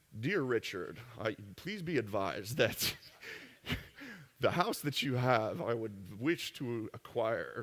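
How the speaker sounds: stiff, stilted, overdone fancy formal voice. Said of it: "Don't try to think of fancy".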